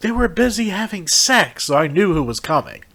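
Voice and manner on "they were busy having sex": put-on high little old lady voice. Retelling a haunted house scare, imitating an old lady's voice. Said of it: "this old lady going".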